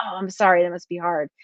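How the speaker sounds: plain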